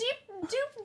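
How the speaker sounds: put-on cooing baby talk, very high.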